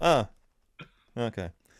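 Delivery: play-acted dry, flat delivery with zero emotion. Retelling a character's reaction from a scene: imitating a flat, emotionless line. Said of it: "way less emotion".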